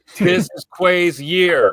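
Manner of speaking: very loud, very high, very slow booming shout. Repeating a viewer's comment for the haters in the back: louder. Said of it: "Say it again louder for the haters".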